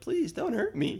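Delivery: acted-out, feeble, pathetic, very high pleading. Retelling a horror movie scene, imitating pathetic begging. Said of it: "pathetically begging Vilmer".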